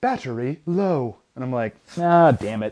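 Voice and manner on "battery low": synthetic British navigation-system voice. Retelling a treadmill run when the GPS voice speaks up, robotic British GPS lady voice. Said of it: "the little like robot GPS British lady voice goes".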